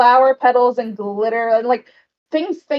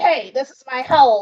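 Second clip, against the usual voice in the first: voice of a tiny little goblin. Narrating, the speaker voices a little goblin poking its head out: little goblin voice. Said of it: "A little goblin pokes his head out".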